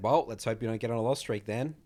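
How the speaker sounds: sarcastic delivery. Retelling own reply to a player complaining about losing, retelling a sarcastic reply. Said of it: "this was a very sarcastic tone".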